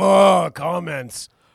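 very loud, fed-up, put-out, dismissive. Teasing a co-host about how they read comments, in a mock put-out tone. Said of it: "Why do you always sound so put out? ... you just are like".

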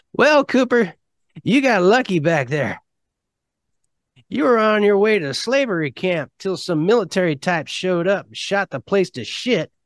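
put-on high old man voice. Telling a story, voicing Maxie as he speaks to Cooper, old man voice. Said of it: "I'm using my old man voice".

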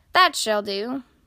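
plain

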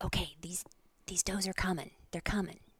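hushed whisper. Retelling what he said as two does approached: imitating a whisper. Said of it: "He whispers to me".

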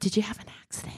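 gentle, soft, hushed, breathy whisper. Acting out comforting someone who had an accident: whispering.

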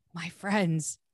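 muttering under breath. Retelling the dwarves bowing in a scene, muttering under breath. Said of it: "I totally said under my breath".

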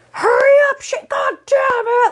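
put-on screaming yell, pitched very high. Retelling how their mom yelled at their injured brother, imitating mom screaming. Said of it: "So she was screaming at him".

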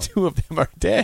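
high speech broken by bursts of laughter. Reading Dave's text line message aloud, laughing while reading. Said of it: "Why am I laughing stop".

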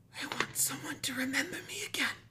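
eerie, very high-pitched, creepy raspy voice. Retelling what a strange, normal-looking being said, in a creepy raspy voice. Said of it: "in the same creepy, raspy voice".

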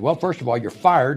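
plain

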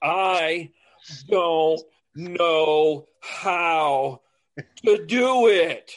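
mock yelling. Recalling a past exchange about doing sign language, retelling a yell. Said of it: "I'm like yelling".

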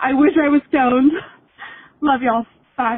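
tearful voice. A caller signs off to the hosts at the end of the call, crying. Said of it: "Sorry, I'm crying".

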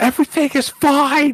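very high, loud yell. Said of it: "he's just standing there yelling".

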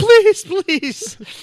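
put-on very high-pitched, pleading, begging, childlike whine.

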